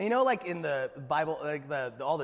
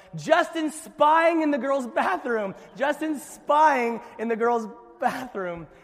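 shrill, loud yelling; 10 semitones higher, 7 dB louder than usual. Retelling a childhood embarrassment: imitating a girl yelling down the hallway. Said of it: "Desiree Severson yelling".

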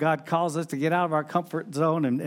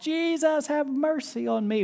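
very high-pitched, slow, drawn-out shout; 10 semitones higher than usual. Retelling how a blind beggar shouts to Jesus: retelling a shout. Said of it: "where he shouts".

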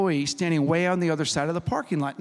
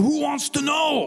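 play-acted, very high, hostile, ready-to-fight voice; 10 semitones higher than usual. Retelling a confrontation with a stranger who challenged the speaker, mimicking his hostile, ready-to-fight tone in an imitating voice. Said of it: "like he was ready to fight me".

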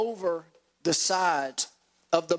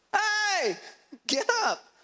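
mock, shrill, very high shouting. Retelling a Bible story, voicing the disciples waking Jesus, retelling the disciples' shout. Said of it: "the disciples woke him up shouting".

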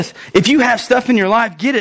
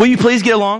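put-on mild, gentle tone. Contrasting how Paul did not say the line: imitating Paul asking mildly. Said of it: "I don't think he says it like that".

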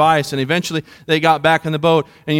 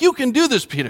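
pitched-up, encouraging, rallying pep-talk tone; 8 semitones higher than usual. Retelling the words to peter, acting out a coach's encouragement. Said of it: "like a coach coaching his player".

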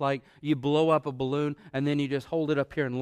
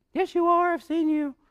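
put-on very high little girl voice; 5 dB louder than usual. Retelling Peter's denial, the speaker voices the servant girl: little girl voice. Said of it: "That's my little girl voice".

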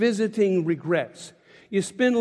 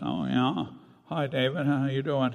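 put-on low, soft, congested voice, sounding sick; 6 semitones lower, 6 dB quieter than usual. Retelling a phone call with a woman, imitating someone with a cold. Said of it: "you sound like you got a cold".

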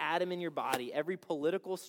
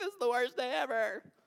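high-pitched, blubbering fake sobbing; 7 semitones higher than usual. Acting out a losing player after the game: mock crying. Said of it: "San Francisco forty-niners are crying".

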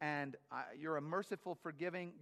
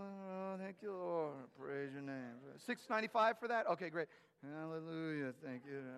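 imitated subdued, low-key muttering. Describing a man who praised god constantly in stores, speaker imitates him: imitating subdued muttered praise. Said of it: "kind of down".

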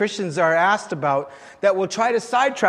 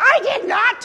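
very high, squeaky little voice; 4 dB louder than usual. Preacher retells a joke where a voice from across the room objects: squeaky voice. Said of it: "this squeaky voice from the other side of the room goes".

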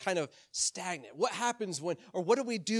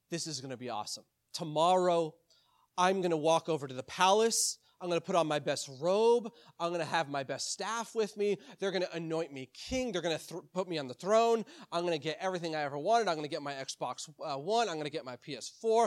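ordinary delivery

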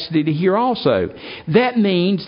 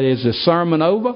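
usual speaking voice

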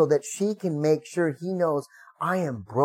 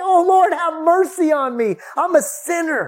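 very high, drawn-out, broken, anguished cry; 13 semitones higher, 7 dB louder than usual. Retelling the tax collector banging his chest: acting out a broken, desperate prayer. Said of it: "he's banging on his chest, and he, he's pulling his hair out".

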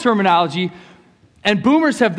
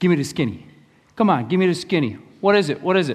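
put-on New York accent throughout. Demonstrating a slang phrase and what it means, in a new york accent. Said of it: "i love the new york accent".

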